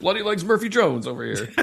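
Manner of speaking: high wrestling commentator voice. Imitating another wrestling commentator: Taz commentator impression. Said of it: "And then Taz being like".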